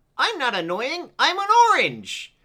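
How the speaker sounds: very high, loud, swooping squeaky cartoon voice. Reading out the show's quote section: Annoying Orange voice. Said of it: "quite a good impression of his voice".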